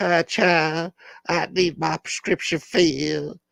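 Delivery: put-on Southern American old lady drawl, high, slow. Retelling how a man in Utah talked like an old lady: Southern accent. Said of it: "with a southern accent, like".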